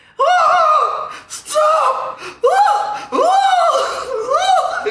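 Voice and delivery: very high, loud screaming cries. Recounting what they heard after minutes of silence, imitating him screaming. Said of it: "He was screaming like that".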